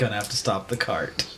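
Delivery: quiet, weary lament, sighed out softly. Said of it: "and just lamentably says".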